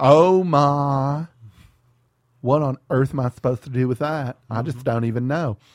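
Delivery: effeminate Southern drawl with the word "my" stretched out. Performing the Sermon on the Mount as Jesus, Jesus as effeminate Southern woman. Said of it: "what if Jesus sounded like an effeminate Southern woman".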